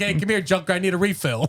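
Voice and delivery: play-acted, very high-pitched, dismissive, rude tone. Retelling a TikTok bit of talking to a robot cashier: imitating someone being rude. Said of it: "just being rude".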